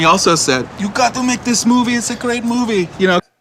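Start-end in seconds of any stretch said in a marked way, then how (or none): 0.8-2.9 put-on Serbian accent in English. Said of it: "He said it in that accent".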